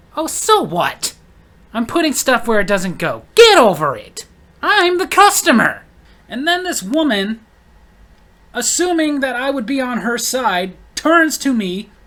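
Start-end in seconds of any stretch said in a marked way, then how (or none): 0.2-5.9 loud, swooping, rude, entitled-sounding voice. Retelling what a customer said to a cashier: imitating a rude customer. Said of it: "customer had to be like".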